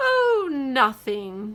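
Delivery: yawning while talking. Reading a story aloud, a character answering: yawning while talking. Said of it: "Chester said with a yawn".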